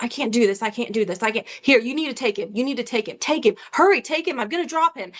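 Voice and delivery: mock stressed, overwhelmed, pleading outburst. Retelling how the ex handed back the crying baby: imitating someone acting stressed. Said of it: "he acted all stressed".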